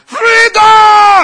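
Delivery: high, loud shout in Scottish accent.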